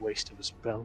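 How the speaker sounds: muttered quietly under the breath. Voicing a character who casts a spell on another: Brom muttering under his breath. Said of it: "sort of under his breath muttering".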